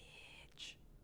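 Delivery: breathy, unvoiced whisper. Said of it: "And I was like".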